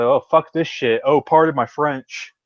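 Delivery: ordinary talk, nothing marked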